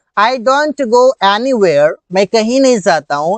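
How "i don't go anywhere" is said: very slow, careful, deliberate English. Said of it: "कैसे बनेगा?".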